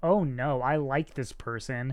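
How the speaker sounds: normal talking voice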